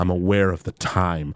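mock very low, soft, expressionless deadpan. Recapping a scene with the two sisters, speaker quotes Lisa in a deadpan Lisa impression. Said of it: "Lisa's just deadpan delivery".

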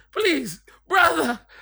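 very high, loud, beggy pleading voice. Retelling what a man said at the edge of the pool, imitating begging. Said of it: "the way he said it was so beggy".

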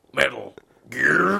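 rough, creaky, raspy, tough Texan growl. Wanting to sound like Solid Snake, doing a Solid Snake impression that sounds Texan. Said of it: "You sound like some Texan".

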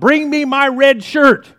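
high, loud bellowing. Telling a story where the captain stands and calls to his panicking crew: Captain Bravado bellowing an order. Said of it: "he bellowed out".

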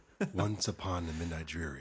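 put-on public radio announcer voice. Showing the others what talking in your NPR voice sounds like: NPR radio voice. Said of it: "talk with my NPR voice".

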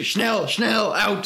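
urgent, forcefully pushed-out screaming. Retelling a scene where an interrogator opens boxes: imitating someone screaming. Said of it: "And then he starts screaming".

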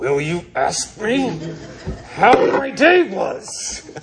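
words forced through clenched, gritted teeth. Retelling asking her in the car after the session, through clenched teeth. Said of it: "through clenched teeth".

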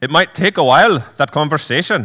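put-on heavy Scottish accent, laid on thick. Reading the teacher's lines in a book: thick Scottish accent as George MacDonald. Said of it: "a thick Scottish accent".

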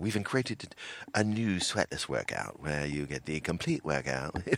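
put-on calm, soft English-accented narration. Imagining an ad voiceover for a workout, doing a Jony Ive voiceover impression. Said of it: "I imagine Johnny Ive doing the voiceover".

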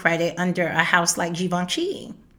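plain

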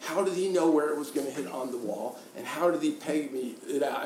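ordinary delivery

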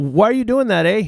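very high, put-on courteous, polite Canadian voice. Joking about lax security, imitating a polite canadian security guard. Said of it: "Canadian security".

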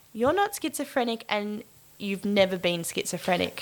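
usual speaking voice

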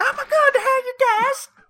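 very high, squeaky character voice.

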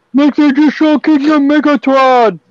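high, loud, excited, maniacal screaming.

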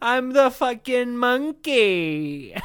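very slow, high-pitched drawl, 'monkey' drawn out. Voicing a talking monkey: Pauly Shore voice. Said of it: "you went fucking Pauly Shore with it".

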